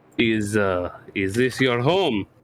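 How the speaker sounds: put-on slow, thick, heavy Russian accent, giant voice. Voicing a giant who cracks his knuckles and asks: Russian accent. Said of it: "The accent carries over".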